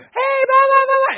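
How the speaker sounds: shrill, very high hollering yell. Speaker recounts a mom in the stands yelling at a player: retelling a mom yelling. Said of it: "she's yelling".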